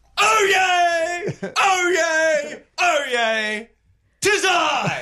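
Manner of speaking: flamboyant town crier cry, delivered with flair.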